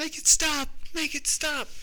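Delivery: shrill, desperate, panicked, very high-pitched yelling. Speaker acts out their mother yelling at the window one morning, retelling mother's yelling.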